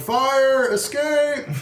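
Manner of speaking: shrill, very high, loud, full-throated shout. As a structure washes down the river, the player's character is yelling. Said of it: "And I'm yelling".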